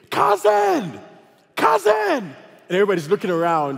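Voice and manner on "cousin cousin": mock, very high, ragged scream with wild pitch swings. Telling about a man in the middle of an airport, retelling a scream. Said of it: "he starts screaming".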